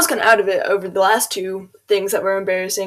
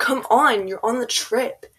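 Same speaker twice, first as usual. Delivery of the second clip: mock irritated, put-out, slow, annoyed tone; 3 semitones higher than usual. Retelling being called up to go on a trip, mock-annoyed. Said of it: "it sounded like annoyed".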